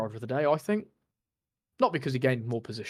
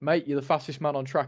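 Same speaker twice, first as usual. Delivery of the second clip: normal talking voice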